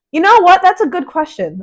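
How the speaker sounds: loud, very high-pitched, swooping voice. Answering another speaker's question about a band, speaking in a loud voice. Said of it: "Let me lower my voice".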